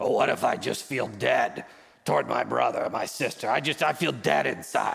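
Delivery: rough, creaky rock-monster voice, ground out. Repeating a listener's question the way they asked it, in a Ben Grimm imitation. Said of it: "you're asking in your Ben Grimm imitation".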